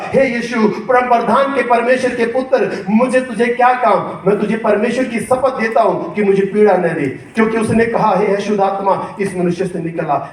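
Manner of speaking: usual speaking voice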